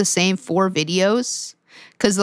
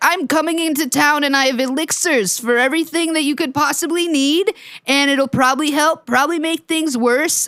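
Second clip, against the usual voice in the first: put-on higher, scammy, old-timey snake-oil con man voice; 7 semitones higher than usual. Mimicking how a man sounds, like an old-timey con man voice. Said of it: "like an old timey con man".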